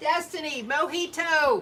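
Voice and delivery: shouting. Calling out names to listeners who can already hear: yelling. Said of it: "You don't have to yell".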